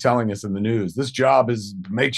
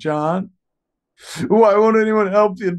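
high, loud, shrill, frantic put-on panicked pleading; 10 semitones higher, 5 dB louder than usual. Retelling what she said on the phone with John, imitating Jennifer panicking. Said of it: "Jennifer is freaking the fuck out".

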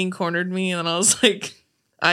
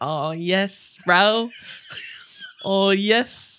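put-on New Zealand accent in a bro-style manner. Quoting a man who has often visited New Zealand, imitating a Kiwi accent. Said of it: "Kiwi accent".

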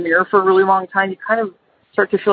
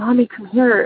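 put-on whispering child voice; 3 semitones higher than usual. Retelling how her child woke her at night: imitating a child whispering. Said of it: "and she's whispering".

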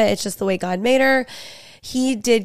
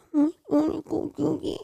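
mock baby talk, higher and quieter; 8 semitones higher, 5 dB quieter than usual. Imitating a four-year-old who talks like a baby: imitating a four-year-old's baby talk. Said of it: "talk like babies".

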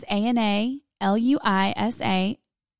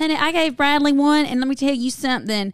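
put-on big Southern drawl, strong and chatty; 3 semitones higher, 3 dB louder than usual. Retelling a favorite client's story, the speaker quotes her: imitating a Southern accent. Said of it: "she is super like southern".

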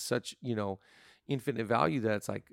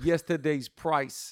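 put-on terrible Boston accent, loud and pitched up; 5 semitones higher, 6 dB louder than usual. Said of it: "what a terrible accent".

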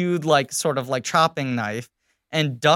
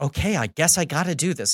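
put-on, deliberately bad American accent. Retelling a movie scene, imitating Orlando Bloom's bad American accent. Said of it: "Orlando Bloom doing one of the worst American accents".

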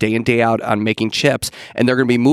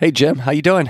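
hoarse, rough voice, higher pitch; 5 semitones higher than usual. Greeting the co-host at the start of the show: rough voice. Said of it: "You sound a little rough".

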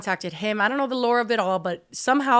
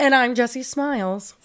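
broadcast-style news anchor voice, carefully enunciated; 3 semitones higher than usual. A show host redoes her own intro line, in a news anchor voice. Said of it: "I feel like an anchor whenever I'm like".

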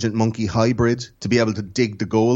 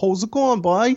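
Cork accent, pitched very high; 11 semitones higher than usual. Showing Sam how to do a Cork accent. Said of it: "If you want to do a Cork accent".

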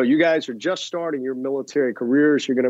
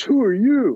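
mouthy, cheeky tone with raised pitch; 8 semitones higher than usual. Retelling a kid echoing his question back at the homeowner, mimicking a lippy kid. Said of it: "he starts getting lippy with me".

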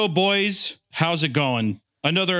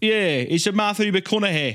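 put-on Scottish accent, pitched up; 5 semitones higher than usual. Trying a name with a Scottish bent: Scottish accent. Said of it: "That's not a bad Scottish accent".

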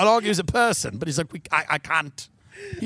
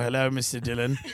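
sad, low, mopey British voice; 6 semitones lower, 4 dB quieter than usual. Retelling a payment call with a man at Bentley: imitating a sad British man. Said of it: "This sad little British guy is like".

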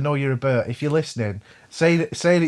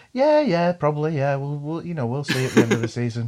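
put-on smug tone. Retelling how they answered someone doubting their team could win the league, acting smug. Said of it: "sort of smugly go".

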